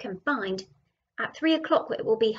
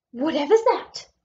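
sudden, raised, high exclamation; 5 semitones higher, 6 dB louder than usual. A woman looking through a telescope spots something on the beach: exclaimed. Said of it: "She exclaimed".

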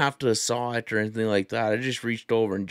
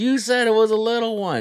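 play-acted, shrill, very high-pitched screaming; 11 semitones higher, 5 dB louder than usual. Telling how the reel ran out, quoting what she said: imitating someone screaming. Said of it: "And she's just screaming".

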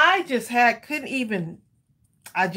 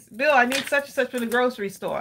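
normal talking voice

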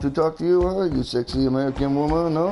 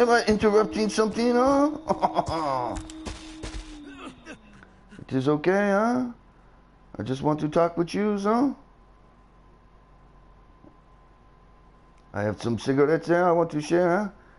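put-on French Canadian accent with swooping tune; 5 semitones higher than usual. Greeting someone in character, French Canadian accent. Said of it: "It's France Canadian [name]".

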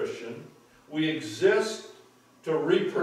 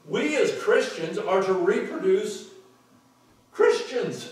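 voice breaking high with excitement; 5 semitones higher, 3 dB louder than usual. A preacher speaking to a nodding audience, voice cracking with excitement. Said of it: "Did my voice crack?".

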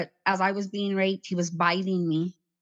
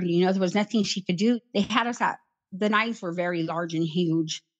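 usual speaking voice

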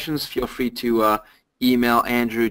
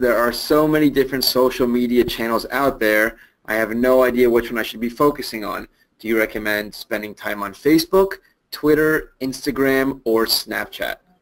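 ordinary talk

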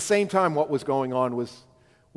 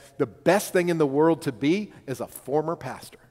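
strong stress placed on the word former. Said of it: "Emphasis on the word former".

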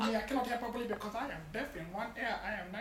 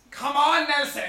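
very loud, booming, pushing holler; 4 semitones higher, 14 dB louder than usual. Acting out a gym workout after being asked: Arnold Schwarzenegger voice. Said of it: "You do quite a good impression of Arnold Schwarzenegger".

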